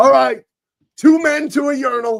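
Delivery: put-on very high, drawn-out, drunken yell. Retelling what a drunk man in line yelled to the crowd: imitating a drunk guy yelling. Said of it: "he yells to the entire crowd".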